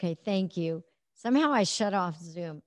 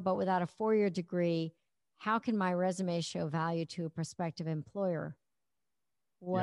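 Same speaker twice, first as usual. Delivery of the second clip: normal talking voice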